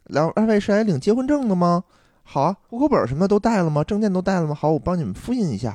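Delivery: put-on very gentle, tender service-counter sweetness. Retelling the marriage registry clerk greeting a couple: imitating a very gentle clerk. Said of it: "反正特别的温柔".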